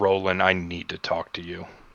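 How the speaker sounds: muttered under the breath. Speaking in character to the Archfey while walking out: said under one's breath. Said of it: "under my breath".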